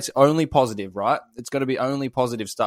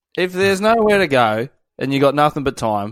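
plain

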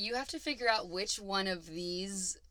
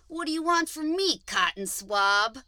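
very loud, high, insulting jab; 6 semitones higher, 9 dB louder than usual. Reading quiz options aloud, saying names like an insult. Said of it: "I'll say them like an insult".

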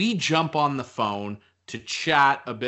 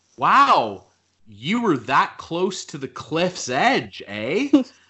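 put-on playful teasing tone, raised and pitched up; 5 semitones higher, 6 dB louder than usual. Speaker retells a remark they made earlier to the listener: retelling a joking remark. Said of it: "jokingly, of course".

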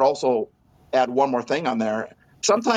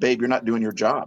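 said jokingly; 3 semitones lower than usual. Retelling what the speaker said to their wife, retelling a joking remark. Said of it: "So jokingly".

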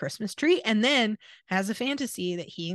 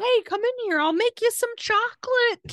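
very high-pitched, loud yell; 13 semitones higher, 3 dB louder than usual. Retelling a story where a man yells to carolers through his window, acting out his yell. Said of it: "he's yelling at them through his basement window".

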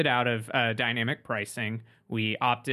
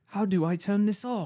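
put-on British accent, higher pitch; 9 semitones higher than usual. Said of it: "But he's British, so it would sound like".

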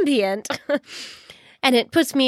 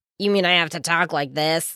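very deep, low, dropped character voice; 9 semitones lower than usual. Needing a voice for the loyal retainer and asked for your closest John impersonation, do a John impersonation. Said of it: "Do your closest John impersonation".

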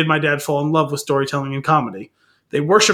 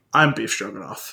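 deep, soft deadpan voice; 5 semitones lower, 5 dB quieter than usual. Retelling a joke where Heston answers Reiner at the table, deep deadpan Heston voice. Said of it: "in his deep voice deadpans".

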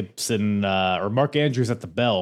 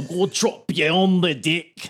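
put-on higher-pitched Scottish accent; 8 semitones higher, 3 dB louder than usual. Retelling a wrestler's pre-match spiel: imitating Zach Gibson. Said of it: "That was so Scottish".

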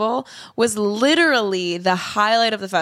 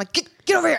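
mock yelling as if at a dog, much higher; 7 semitones higher than usual. Recounting calling drunk Emily back from the ocean, retelling yelling at a dog. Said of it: "I'm like yelling at her like she's a dog".

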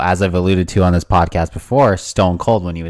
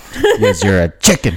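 ordinary delivery

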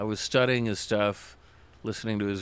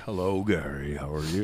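basso profundo, deep rumbling bass voice; 5 semitones lower than usual. Retelling an interviewee's greeting: imitating a deep basso profundo rumbling voice. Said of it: "deep basso profundo rumbling voice".

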